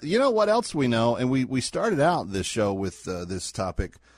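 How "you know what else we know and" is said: ordinary delivery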